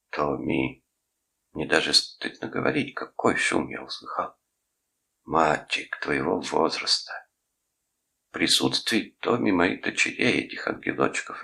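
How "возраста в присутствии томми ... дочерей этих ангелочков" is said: ordinary delivery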